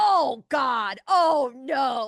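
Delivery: very loud, long, slow, drawn-out scream. Retelling how a dad reacted in a movie theater: imitating dad screaming. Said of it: "he started screaming out loud".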